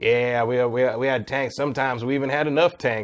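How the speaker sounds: put-on southern accent in a narrator voice. Describing a video game's tank intro, quoting its narrator in a southern accent. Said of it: "some like narrator with like a southern accent going like".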